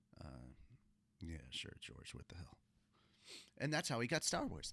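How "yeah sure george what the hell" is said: soft-spoken, hushed voice, almost whispered. Acting out Harrison Ford talking to George: soft-spoken Harrison Ford impression. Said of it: "this is my Harrison Ford".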